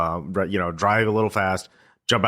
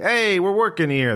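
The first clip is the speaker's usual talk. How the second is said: very high, put-on New York accent; 11 semitones higher, 3 dB louder than usual. Describing warehouse workers yelling at the player for getting in their way: New York accent. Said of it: "they have New York accents for some reason".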